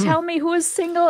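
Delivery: imitated women's screaming. Retelling fans greeting a soccer team, imitating women screaming. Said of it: "They were screaming at them".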